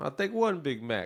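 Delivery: high-pitched puppet character voice. Retelling ordering Big Macs at a drive-thru: the Count from Sesame Street voice. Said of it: "like the Count from Sesame Street".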